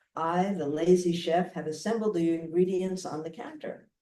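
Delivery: ordinary talk, nothing marked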